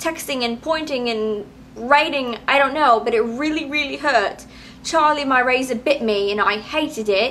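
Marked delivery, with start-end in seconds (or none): 4.8-7.3 put-on, theatrical English accent. Complaining that a razor cut a finger, in an English accent. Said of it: "Like that English accent?".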